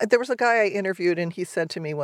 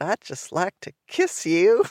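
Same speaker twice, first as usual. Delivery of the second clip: put-on accent of the American South. Recalling a woman who drove the speaker around one night, imitating a Southern accent. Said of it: "she had this Southern accent".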